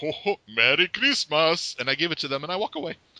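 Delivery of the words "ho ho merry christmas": slow delivery with every word drawn out. Telling how they approached a family, the speaker greets them in a deep Santa Claus voice. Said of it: "in a deep Santa-esque voice".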